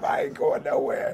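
acted hot-tempered, heated, fired-up outburst. Retelling a man grabbing a knife as men claim to arrest him: mock-heated outburst. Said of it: "he was heated".

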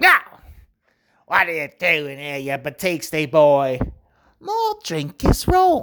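silly, ridiculous put-on British accent. Recalling customer service work, mimicking upset customers in a ridiculous put-on british voice. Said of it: "just the most ridiculous voice for".

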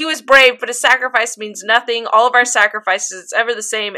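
ordinary delivery

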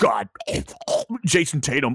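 sportscaster-style delivery. Imitating the Boston announcer calling a player's name: imitating Scal the announcer. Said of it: "you have Scal, who's like".

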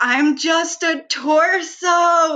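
mock bawling sob, very high, slow, drawn-out. Telling a story about being in the car, retelling bawling. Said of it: "I'm bawling in the car".

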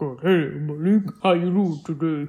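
bottom-of-the-register bass voice, as low as possible. Naming a pick from Potomac and imitating him: Kris from Potomac, super low voice. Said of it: "He's that guy that has a super, super low voice".

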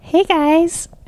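very high, teasing, mocking put-on voice. Podcast host introduces her boyfriend Dominic and says his greeting in a high-pitched voice. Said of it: "why would you give me the high-pitched voice".

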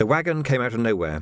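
ordinary delivery

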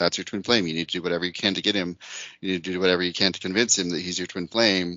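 ordinary delivery

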